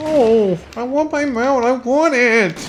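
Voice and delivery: very high, whining, pleading voice. Gamer, just told their voice sounds whiny, keeps going in a mock-whiny voice. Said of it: "You have a really whiny voice when you do that".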